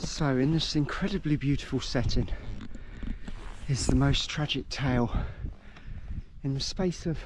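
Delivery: out of breath between words, winded. After walking half a mile up a hill, the speaker introduces the graves, out of breath. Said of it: "I'm so out of breath".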